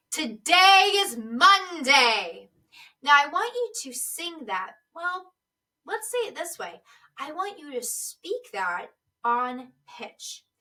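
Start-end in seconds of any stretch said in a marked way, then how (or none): 0.1-2.4 deep, loud, projected announcing voice, "monday" drawn out. Demonstrating a line for the listener to repeat: announcing to a large room. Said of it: "Say it to me as though you are announcing it".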